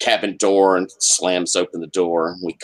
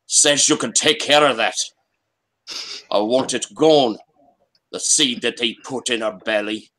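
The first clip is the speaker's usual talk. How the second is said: deep Scottish Highland brogue; 4 semitones higher than usual. Voicing a rough man at the cabin door: deep Highland brogue. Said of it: "a pretty deep Highland brogue".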